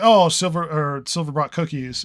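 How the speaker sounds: ordinary talk, nothing marked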